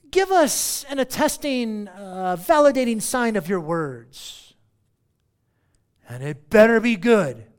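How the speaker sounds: loud, insistent, emphatic, challenging demanding tone. Acting out the crowd demanding a sign from Jesus: imitating an emphatic demand. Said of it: "They emphatically demanded he do a sign".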